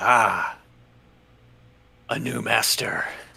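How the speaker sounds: very slow, rough, creaky talking-sword voice. Voicing a talking sword that the player just picked up: talking sword's voice in your head. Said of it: "you hear the voice say".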